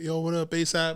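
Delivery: high, loud yell, called across to someone far off. Retelling spotting a passing entourage twenty feet away, retelling a yelled greeting. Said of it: "I just yell like".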